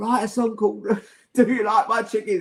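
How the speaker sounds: acted words squeezed out through laughter. Retelling a voice note sent to Paul: retelling own words while laughing. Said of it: "I was just laughing so much I could barely get the words out".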